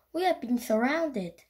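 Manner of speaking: plain reading voice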